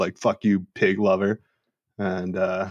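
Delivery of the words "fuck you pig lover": ordinary delivery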